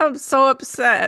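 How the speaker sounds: talking through laughter. Speaker, cracking up after telling a funny story: laughing while talking. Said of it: "I can't stop laughing".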